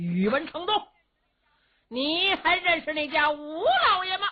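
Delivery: high, loud call at full voice. Wu Yunzhao calls out to Yuwen Chengdu before the battle lines, shouting loudly. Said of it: "武云照高声喊嚷".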